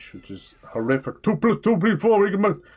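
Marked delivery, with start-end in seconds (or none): 1.2-2.6 very high, loud London grime patter. Mocking how a modern london game would sound: imitating london grime speech. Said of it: "all that fucking grime speech".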